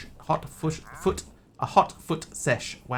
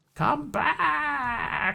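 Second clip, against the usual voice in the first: very high, raspy, rough, all-out villain yell; 13 semitones higher than usual. Retelling how a game's antagonist yells when you quit: imitating a villain yelling. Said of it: "the antagonist yells out at the top of his voice".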